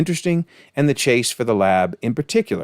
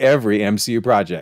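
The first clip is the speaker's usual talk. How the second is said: strong, hard stress on "every". Reading out a comment aloud, putting strong stress on the word every. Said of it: "I want to stress the word every".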